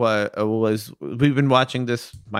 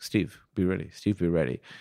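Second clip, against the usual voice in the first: put-on quiet murmur, much lower, quieter and slower; 5 semitones lower, 7 dB quieter than usual. Retelling a game moment, acting out a player's quiet aside to another. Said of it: "he quietly says".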